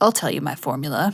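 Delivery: low, half-hearted impression voice.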